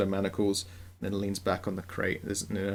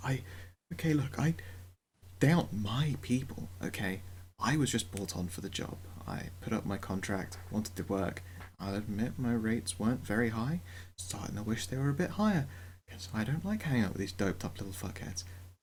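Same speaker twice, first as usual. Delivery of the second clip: anxious, nervous hushed half-whisper; 3 dB quieter than usual. A nervous character looks around before talking; nervous hushed half-whisper. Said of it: "in a hush whisper, she's like".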